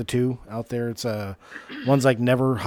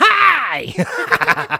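put-on intense, nervous witch voice, higher and louder; 8 dB louder than usual. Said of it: "I'm like [name] when she became a Sanderson sister".

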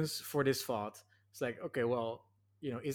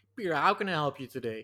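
put-on cowboy accent, louder; 4 dB louder than usual. Retelling how a woman from Ohio greeted him, imitating a cowboy accent. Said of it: "Cowboy accent".

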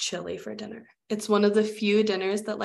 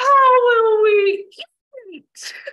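mock very high, very loud, shrill, crying child voice; 14 semitones higher, 9 dB louder than usual. Retelling his three-year-old's reaction to his brother's news, imitating a child near tears. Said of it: "almost in tears".

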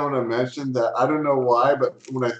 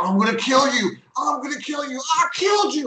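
shrill, very high gamer-style screaming; 13 semitones higher than usual. Describing him finally getting into the game, retelling a scream. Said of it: "Like just screaming like that".

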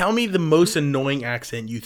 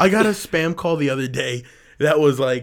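ordinary delivery

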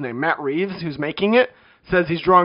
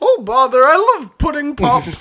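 very high, loud, swooping sing-song storybook bear voice; 9 semitones higher, 6 dB louder than usual. Showing that every impression comes out the same: Winnie the Pooh voice. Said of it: "my Bill Cosby impression was just my Winnie the Pooh one".

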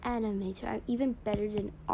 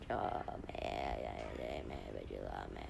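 voice dropped very low, slow and rough; 9 dB quieter than usual. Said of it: "Fans that are trying to imitate his voice be like".

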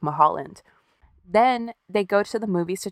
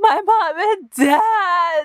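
hysterical crying, very high, slow, drawn-out wail; 12 semitones higher, 6 dB louder than usual. Retelling a 911 call by someone whose parents were shot, imitating the hysterical caller. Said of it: "He's just hysterical".

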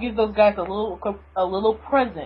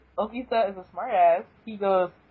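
ordinary delivery

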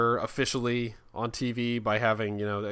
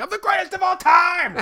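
very high, loud, screamed, boastful; 7 dB louder than usual. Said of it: "just screaming at everybody".

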